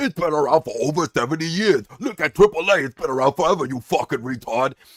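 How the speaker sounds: mocking nerdy voice. Mocking fans who would shrug off the company going under: mocking imitation of wrestling nerds. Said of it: "all these fucking nerds out there that are like".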